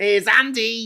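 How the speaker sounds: very loud, high-pitched, belted Scouse shout. Imitating a politician storming into a cabinet meeting: Andy Burnham Scouse accent. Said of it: "as you might say in his Scouse accent".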